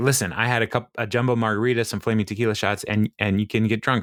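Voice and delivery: ordinary talk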